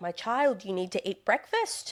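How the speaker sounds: put-on South African accent. Retelling a patient's words about skipping breakfast: imitating a South African accent. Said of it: "I think it was South African or something".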